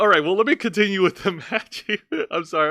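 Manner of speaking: cracking up, laughing through the words mid-sentence. Trying to continue recapping a match, laughing while talking. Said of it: "I'm cracking myself up".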